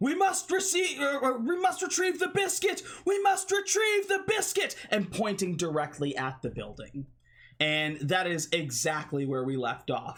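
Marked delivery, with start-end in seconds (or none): 0.0-4.7 very high, frenzied, frantic screaming in a put-on character voice. Voicing a frantic crew member rushing onto the deck: screaming in character.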